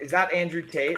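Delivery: ordinary delivery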